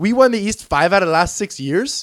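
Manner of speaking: put-on Canadian accent, laid on thick. Quoting Tristan Thompson on winning the East, do a Tristan Thompson impression in a put-on Canadian accent. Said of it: "That's my Canadian accent".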